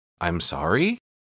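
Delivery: sorry with rising, question-like upward inflection. Quoting how he replied, not really apologizing, rising inflection on sorry. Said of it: "Just like that, like upward inflection on his voice".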